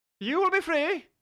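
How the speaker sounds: bad put-on Irish accent, very high pitched. Speaker keeps going right after apologizing for the accent, in a horrible Irish accent. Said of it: "Sorry for the horrible uh, Irish accent".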